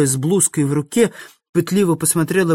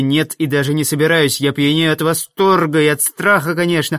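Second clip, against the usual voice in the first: plain reading voice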